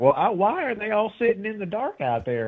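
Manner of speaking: squeaky, very high voice. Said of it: "we all hear this squeaky voice from behind".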